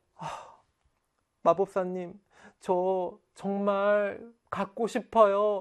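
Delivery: weak, slow, sad pleading tone.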